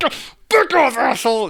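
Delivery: very high-pitched, furious, pissed-off outburst. Retelling a favorite film scene where a bag is grabbed: imitating Robin Williams pissed off. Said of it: "Robin Williams really pissed off".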